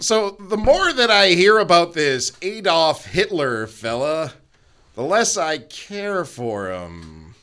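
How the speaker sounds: slow, drawn-out delivery. Doing a bad impression for others to guess: Norm Macdonald impression. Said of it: "I think that that was Norm Macdonald".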